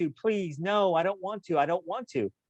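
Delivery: mock screaming in a child's voice. Retelling a boy on a dune buggy screaming at his mom, imitating a screaming kid. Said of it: "He's screaming".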